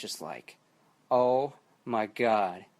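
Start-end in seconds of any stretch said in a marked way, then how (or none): 1.1-2.5 thrilled, overwhelmed, excited freaking-out outburst. Retelling first seeing a new photo online: imitating own freaking out. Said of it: "I was freaking out".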